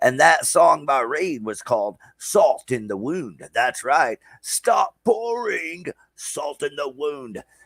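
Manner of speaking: radio DJ patter, pitched high. Host announcing bands and songs like a radio show, in a DJ Wolfman voice. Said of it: "I'm in my D J Wolfman voice here".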